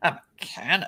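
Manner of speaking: play-acted, very condescending, snooty, talking-down tone. Retelling a surgeon's reply to being called a mechanic: imitating a condescending tone. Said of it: "very condescending".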